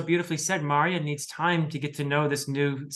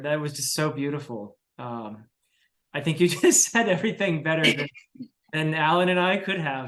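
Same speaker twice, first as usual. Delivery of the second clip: emotional, choked-up voice catching, on the edge of tears. Responding to another speaker's words about the series ending: choking up. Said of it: "I'm choking up a little bit here".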